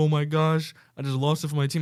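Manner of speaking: acted-out sobbing, heartbroken and tearful. Retelling a red card for a handball, imitating Luis Suarez crying. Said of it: "starts crying like".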